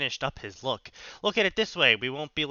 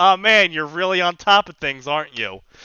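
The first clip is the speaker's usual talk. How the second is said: put-on, snarky, mock-sincere sarcasm; 2 semitones higher, 9 dB louder than usual. Imagining teasing a brother who wears his shirt backwards: put-on sarcastic comment. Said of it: "some sarcastic comment like".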